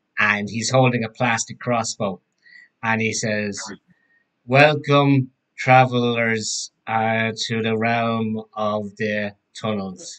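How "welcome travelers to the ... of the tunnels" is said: ordinary talk, nothing marked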